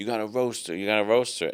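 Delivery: mock pushy, insistent, pleading, begging tone. Retelling how a cousin kept asking for a roast: imitating someone begging. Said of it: "my cousin was begging me".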